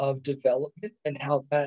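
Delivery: plain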